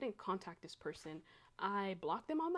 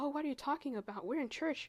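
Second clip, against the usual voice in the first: high, feigned, mock astonishment, playing dumb; 6 semitones higher, 3 dB louder than usual. Retelling how a woman in church reacted: imitating feigned surprise. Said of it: "she cowered back and acted surprised".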